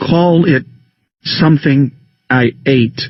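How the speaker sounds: deliberate, clearly enunciated words. Speaking into a silent room with eyes closed: slow and distinct. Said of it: "I am speaking slowly and distinctly".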